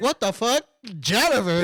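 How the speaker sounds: normal talking voice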